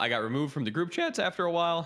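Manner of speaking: voice cracking mid-sentence. Recounting what happened after a falling-out with a friend group: voice cracking. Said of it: "a fucking voice crack".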